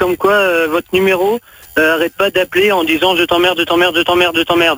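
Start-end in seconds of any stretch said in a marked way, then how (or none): none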